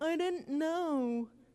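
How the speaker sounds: put-on teenager voice, the word know drawn out. Advising parents, acting out what a teen might say later, in a teen voice. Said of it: "That's my teen voice every time".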